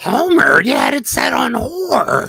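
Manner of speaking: very high, raspy, swooping, loud cartoon voice. The others urge you to go on and do it; speak in a Marge Simpson voice. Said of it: "I can do a Marge Simpson though".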